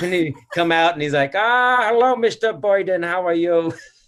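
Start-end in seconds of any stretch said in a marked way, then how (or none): 1.3-3.7 put-on old man's old-world European accent, high and slow. Retelling how a man came out to greet Mister Boyden: imitating Mendel's accent. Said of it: "what a great accent".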